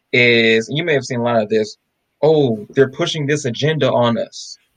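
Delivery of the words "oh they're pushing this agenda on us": ordinary talk, nothing marked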